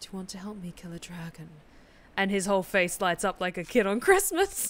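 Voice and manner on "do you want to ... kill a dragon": flat, level, dead-serious deadpan delivery. Acting out an imagined scene, deadpan delivery. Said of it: "looks him dead in the eye and goes".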